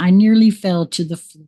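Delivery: plain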